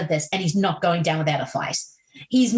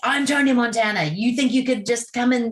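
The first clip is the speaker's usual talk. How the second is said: mild, mock-angry, screaming-style yell; 4 semitones higher than usual. Retelling the film's balcony scene: imitating Tony Montana screaming. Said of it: "just screaming at them like".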